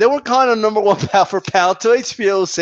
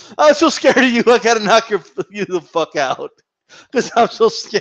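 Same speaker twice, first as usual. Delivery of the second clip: usual speaking voice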